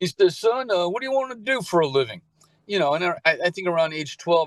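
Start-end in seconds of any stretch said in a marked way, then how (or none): 0.4-2.2 put-on Southern accent with raised pitch. Retelling what the Navy dad asked: imitating a Southern dad. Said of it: "he talks like this, he's a Southern guy".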